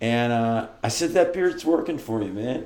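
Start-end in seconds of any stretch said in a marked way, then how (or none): 1.1-2.7 acted bright, upbeat, cheerful, pitched-up tone. Retelling a compliment to a stranger at the supermarket: imitating own cheerful compliment. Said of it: "And with that tone of voice".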